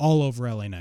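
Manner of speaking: ordinary talk, nothing marked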